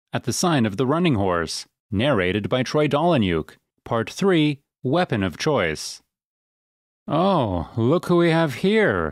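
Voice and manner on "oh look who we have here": slurred speech, higher and slower. Narrator reads a young man's remark to Elvin, in a slurred voice. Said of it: "the young man said in a slurred voice".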